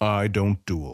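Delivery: calm, even, unruffled, composed. The one challenged to a friendly duel answers calmly. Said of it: "Wayra answered calmly".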